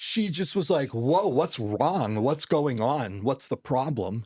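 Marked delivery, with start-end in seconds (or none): 0.9-4.2 put-on startled reaction, higher. Speaker retelling a woman's reaction to a father's raw emotion, imitating a startled reaction. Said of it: "her reaction to seeing that much raw emotion".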